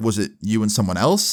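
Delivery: ordinary delivery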